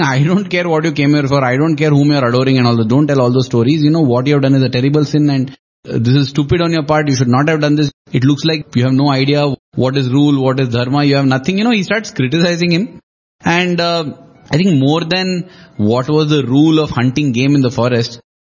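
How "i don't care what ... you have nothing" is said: plain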